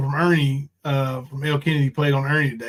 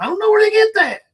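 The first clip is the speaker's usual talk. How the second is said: voice shooting up very high, high-pitched; 5 dB louder than usual. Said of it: "And his voice gets real high".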